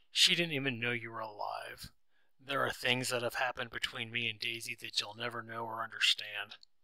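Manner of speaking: ordinary talk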